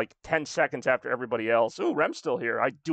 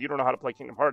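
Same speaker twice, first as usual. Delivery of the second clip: ordinary talk, nothing marked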